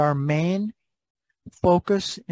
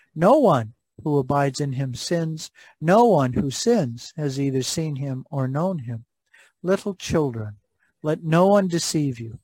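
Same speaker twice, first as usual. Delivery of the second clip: ordinary delivery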